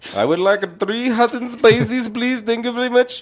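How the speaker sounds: very high, loud, put-on Indian accent. Ordering at a drive-through window, in a put-on indian accent. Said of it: "If I start off with the Indian accent".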